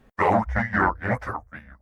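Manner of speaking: voice of a demon. Narrator reads a demon's reply over the phone: demonic voice. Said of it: "A demon on the other side of the phone answered".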